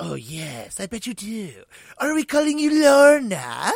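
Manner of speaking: put-on French accent, climbing loud.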